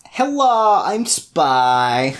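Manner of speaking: put-on vague European accent, drawn-out, spy-like. Showing how an unmasked spy talks in their murder mysteries, vague european spy accent. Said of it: "they then have the accent of the place that they're a spy for".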